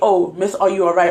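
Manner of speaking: ordinary delivery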